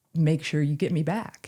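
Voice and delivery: imitated little soft whisper. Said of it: "this little whisper".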